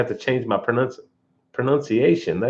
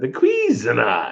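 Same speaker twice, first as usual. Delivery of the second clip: British English accent. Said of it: "I got a British accent".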